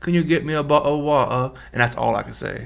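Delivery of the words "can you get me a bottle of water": casual, put-on British accent. Asked on the spot to do voices, giving a go-to British accent. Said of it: "if you tell me right now do a British accent, ... My go-to would be like".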